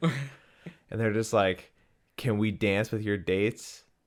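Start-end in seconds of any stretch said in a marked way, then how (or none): 2.2-3.8 put-on flat deadpan delivery. Speaker retells what a guy said to them, mock deadpan. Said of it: "the guy's like deadpan".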